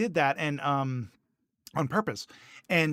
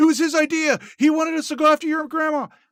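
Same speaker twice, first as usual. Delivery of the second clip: high-pitched, loud, fast panicked pleading. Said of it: "he starts saying".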